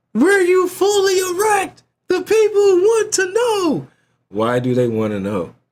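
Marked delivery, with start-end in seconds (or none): 0.2-3.9 very high, drawn-out scream at full lung power. Repeating what a man demanded of someone, retelling a scream. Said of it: "Why are you screaming this at the top of your lungs?".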